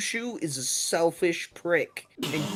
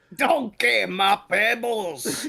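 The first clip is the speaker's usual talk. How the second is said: loud, high-pitched, slow, drawn-out cartoon voice; 6 semitones higher, 5 dB louder than usual. Saying the cereal line as a mix of Shrek and Fruity Pebbles commercials. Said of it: "a mix of, like, Sh-, Shrek and the Fruity Pebbles commercials".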